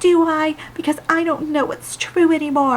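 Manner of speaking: tearful, weepy, high crying voice. Recapping a show scene, quoting a character, imitating a character crying. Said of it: "crying now".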